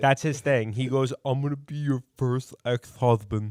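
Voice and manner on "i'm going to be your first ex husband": put-on lisp. Quoting a line that Greg says to girls: imitating Greg with a lisp. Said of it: "where is this lisp coming from?".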